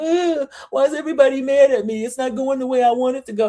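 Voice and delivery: high, tearful crying through every word, put-on. Retelling how a coworker complains that everybody is mad: imitating Shamea crying. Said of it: "now she's sitting around crying like".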